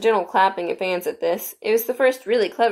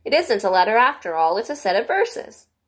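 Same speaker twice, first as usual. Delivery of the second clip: ordinary delivery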